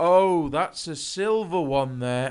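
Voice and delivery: slow, drawn out, each word deliberate. Retelling what another man said on seeing a coin: imitating someone saying it loudly. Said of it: "he said really loudly".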